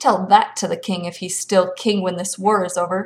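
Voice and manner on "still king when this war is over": plain reading voice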